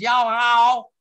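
loud, thick North Carolina drawl. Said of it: "someplace in North Carolina".

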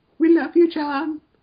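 very high, squeaky, extremely high-pitched squealing voice.

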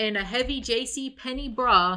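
plain

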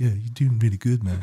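put-on hippie accent. Describing the snake he voices in the show, saying its line: hippie accent. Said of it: "I give him like a hippie accent".

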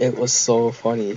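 ordinary talk

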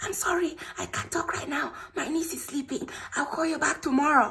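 mock man's whisper. Retelling a man's reply when the speaker called him back, imitating his whisper. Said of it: "This guy was whispering".

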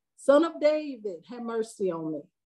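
normal talking voice

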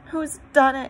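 high, loud exclaimed outcry. Narrator reads Susan at the empty table, crying out. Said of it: "cried Susan".

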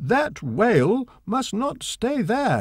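high, angry shouting. Narrating, the angry harbour master shouts about the whale in the gate: shouted. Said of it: "he shouted".

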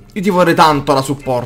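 ordinary delivery

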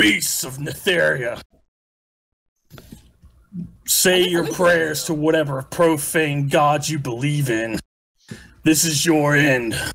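very gruff, harsh, rough-edged voice. Voicing someone heard through the ship's helm, in a very gruff voice. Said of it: "You hear a very gruff voice come through the ship's helm".

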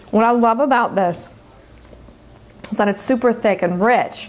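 speaking with mouth full of food, chewing. Tasting a dish on camera, the speaker talks with mouth full. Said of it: "I'm talking with food in my mouth".

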